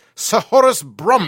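put-on British accent, very loud and high-pitched. Showing how to say a British paleontologist's name: British accent. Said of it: "You have to say it like this".

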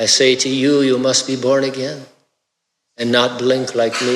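put-on, fake Spanish-sounding accent.

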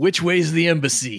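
put-on American English accent. Speaker pretends to ask an american tourist the way: american accent. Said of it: "I'm gonna say to him in an American accent".

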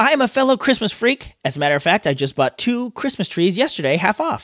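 ordinary delivery

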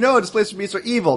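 high-pitched, insistent scream. Imitating D and D players objecting to a friendly beast: imitating someone screaming. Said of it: "are screaming, saying".

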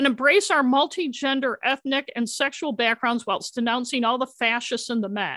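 usual speaking voice

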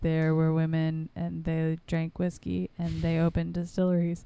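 mock flat, dull, boring monotone reading voice. Speaker imitates the guy who read the book aloud; mocking a monotone reader. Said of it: "so monotone and so boring".

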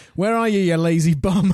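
ordinary delivery

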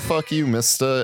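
ordinary delivery

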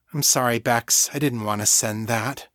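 ordinary delivery, nothing marked

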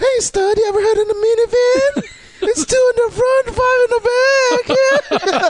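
weird, very high, mumbled woman's voice. Playing a woman addressing a man as stud, in a weird, mumbly lady voice. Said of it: "your lady voice was so weird and mumbly".

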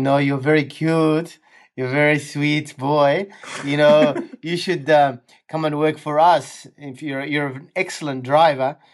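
put-on sweet French accent. Retelling the woman in his back seat talking to him, sweet French accent. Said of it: "she had this sweet French accent".

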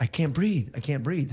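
ordinary talk

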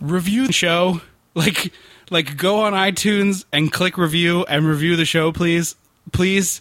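repeated, pleading, down-on-its-knees begging. Speaker asking listeners to review the show, begging. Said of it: "I'm literally begging".

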